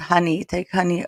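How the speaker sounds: ordinary delivery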